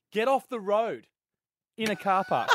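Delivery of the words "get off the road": mock yelling shout. Retelling a driver who yelled at the speaker in a car park, imitating a driver yelling. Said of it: "goes past me and yells out".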